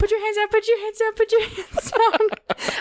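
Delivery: acted, very high, frantic terrified screaming. Recalling a roller coaster ride next to a cousin, retelling own terrified screaming. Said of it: "the whole time I was screaming".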